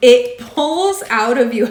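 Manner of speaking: loud laughing, drawn-out words. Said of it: "I'm laughing".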